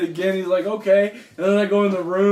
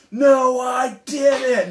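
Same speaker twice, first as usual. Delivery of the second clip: put-on high, cross, indignant, angry kid voice; 5 semitones higher than usual. Retelling how the boy stood up mad and denied it: imitating Connor yelling angrily. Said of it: "and yells at me".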